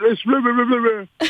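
very high, garbled, muffled babble. Showing how talking sounds with a mouthpiece in: talking with a mouthpiece in. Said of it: "when you got a mouthpiece in and you're trying to talk".

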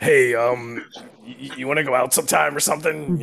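very aggressive put-on voice. Acting out someone asking a person out, in a super aggressive voice. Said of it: "this super aggressive voice being like".

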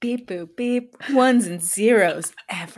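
put-on sexy, seductive robot voice. Playing a sex robot in a comedy bit, sexy robot voice. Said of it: "You've got a good sexy robot voice".

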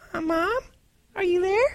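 put-on tiny, very high little child voice. Retelling a girl on a packed subway calling for her mom, in a little child's voice. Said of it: "you hear this little voice".

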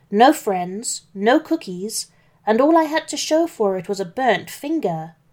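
plain reading voice

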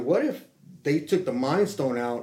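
ordinary talk

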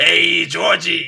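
put-on loud, high, belted-out Brooklyn accent. Comparing two film clowns, imitating Pennywise with a Brooklyn accent. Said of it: "he's got that Brooklyn accent".

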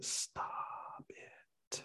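soft, breathy whisper, well below normal speaking level.

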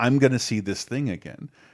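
ordinary talk, nothing marked

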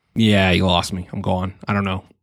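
ordinary talk, nothing marked

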